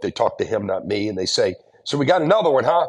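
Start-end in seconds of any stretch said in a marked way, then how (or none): 1.8-2.9 mock rambunctious, boisterous, sarcastic, pitched up. Retelling what prison guards said about a new inmate: imitating a rambunctious guard. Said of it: "kind of real rambunctiously".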